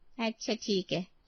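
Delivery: plain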